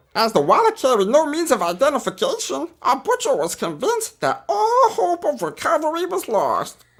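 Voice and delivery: very high-pitched, goofy alien voice. Having said this is the best one you can do, perform a Jar Jar voice. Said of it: "I can do Jar Jar".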